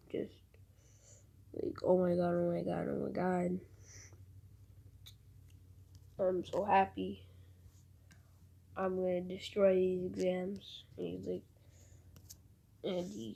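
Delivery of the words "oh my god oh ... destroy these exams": usual speaking voice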